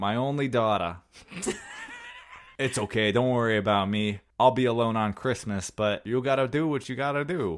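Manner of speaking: put-on New York, New Jersey accent. Imitating a movie father talking to his daughter, in a stereotypical New York-New Jersey accent. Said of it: "stereotypical like New York, New Jersey accent".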